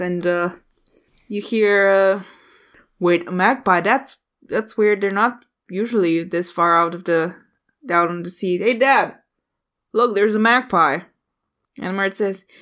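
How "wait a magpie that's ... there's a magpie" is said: usual speaking voice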